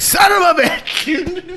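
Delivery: high, slow, exasperated shout.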